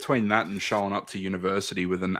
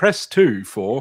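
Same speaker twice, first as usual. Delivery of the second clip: very loud, high, automated phone-menu voice; 5 semitones higher, 10 dB louder than usual. Imagining phoning a bank in a modern remake: automated phone line voice. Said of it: "And the voice goes".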